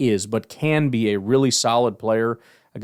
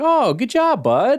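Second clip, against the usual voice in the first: very high, very slow, drawn-out, surprised, patronizing tone; 14 semitones higher, 4 dB louder than usual. Imitating the inflection used when a player makes a play, mock-surprised praise as to a child. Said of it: "That that sort of shocked, like like a little like a little child".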